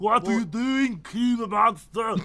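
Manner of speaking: fake, put-on German accent. Voicing the detective character again: put-on Austrian-sounding accent. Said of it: "Yours sounds more like, uh, Austria".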